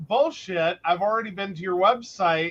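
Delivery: normal talking voice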